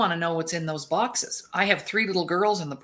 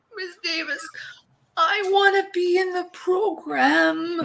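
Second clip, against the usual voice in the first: put-on very high, teary, crying little-girl voice; 12 semitones higher than usual. Retelling a child who was crying in the lineup: imitating a crying child. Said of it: "She's crying".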